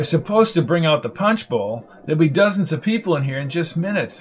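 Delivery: ordinary delivery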